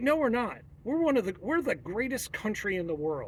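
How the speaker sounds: plain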